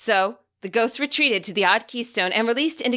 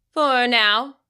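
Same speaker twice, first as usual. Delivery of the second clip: bored, uninterested, couldn't-care-less tone. Questioned by a Pokémon among the trees, a woman answers: bored tone. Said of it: "she said in a bored tone".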